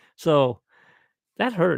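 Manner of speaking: ordinary delivery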